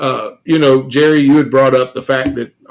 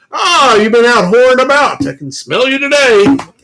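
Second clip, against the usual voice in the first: very high, haughty, pompous professor-like voice; 11 semitones higher, 3 dB louder than usual. Recalling what he would say to female friends, imitating pompous Mr. Kaywood. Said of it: "Mister Kaywood was very pompous".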